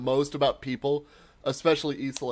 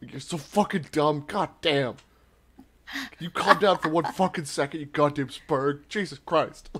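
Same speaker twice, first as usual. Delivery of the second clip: put-on cranky, grumpy old-man grumbling, like sleep-talk. Retelling own complaining while asleep: imitating own sleep-muttered complaining. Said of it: "I was just sleep bitching at people".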